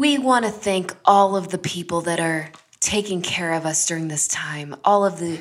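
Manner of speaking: sugary, fake-sweet put-on announcer voice. Retelling a radio commercial, imitating the lady's phony voice. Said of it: "this lady has such a phony voice".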